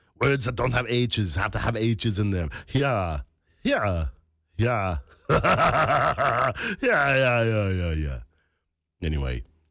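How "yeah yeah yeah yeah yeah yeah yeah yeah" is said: very slow, stretched yeahs with breathy added h. Showing listeners the secret to a good Arnold impression: Arnold impression. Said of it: "doing a good impression of Arnold".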